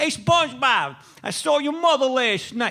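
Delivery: put-on thick New York accent. Retelling what a guy yelled at SpongeBob, in a thick New York accent. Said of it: "thickest New York accent voices you could ever hear".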